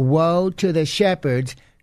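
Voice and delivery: very slow, deliberate reading, word by word. A speaker rereads a verse from Jeremiah to the listeners; read very slowly. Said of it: "Let me read that slowly again".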